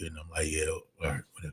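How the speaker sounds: very low, very quiet, put-on bored indifference. Showing how they sound when bored: imitating being bored. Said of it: "If I'm bored".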